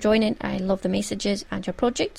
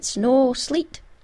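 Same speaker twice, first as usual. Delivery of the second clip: put-on Scottish-accented delivery; 4 semitones higher, 3 dB louder than usual. Retelling a reply to a tweet as it would be said in a scottish accent. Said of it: "if I was saying in a Scottish accent".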